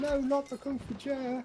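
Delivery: high, shouted, frenzied zealot-like cry.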